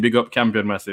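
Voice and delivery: ordinary talk, nothing marked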